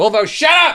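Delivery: very high, shrill, loud yelling. Reading out thank-you names, breaking off to yell at the cat: yelling at a cat. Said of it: "Even though I'm yelling at my cat".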